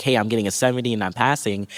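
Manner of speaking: ordinary talk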